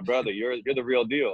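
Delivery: put-on Haitian accent, male voice. Retelling what a man said after you put him through a workout, imitating a Haitian accent. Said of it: "he has a Haitian accent".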